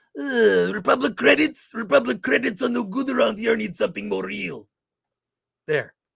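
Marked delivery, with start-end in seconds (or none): 0.2-4.7 rough, creaky, roughened-up delivery. Answering a viewer's request for an impression: Watto impression. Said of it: "maybe I could do Watto from Star Wars".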